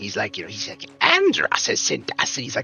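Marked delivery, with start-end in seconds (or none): 1.0-2.4 high, slow, slithery reptile voice with hissed s's. Describing a show's lizard character, imitating its line: high-pitched hissing lizard voice. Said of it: "kind of high pitched and kind of his S's are like".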